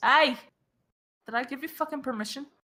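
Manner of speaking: put-on Scottish-sounding accent. Voicing a character poked with a mace: accidental Scottish accent. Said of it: "did that come out Scottish?".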